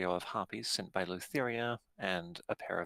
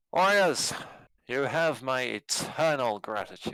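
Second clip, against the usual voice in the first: booming, loud, hall-filling regal voice; 3 semitones higher, 7 dB louder than usual. A game master voices a ruler greeting the four heroes in his hall: booming voice. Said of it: "he just booms the entire hall".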